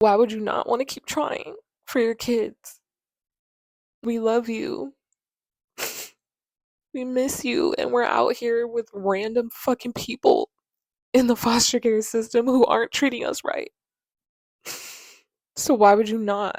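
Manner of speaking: loud, high, tearful crying outburst. A child in foster care pleading with their parent, crying while talking. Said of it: "let me gather myself".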